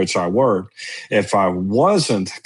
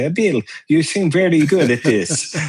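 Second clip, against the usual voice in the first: thick put-on Italian accent, pitched up; 8 semitones higher than usual. Retelling what a barbecue consultant told him at the shop, imitating Max's heavy Italian accent. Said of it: "with a very heavy Italian accent".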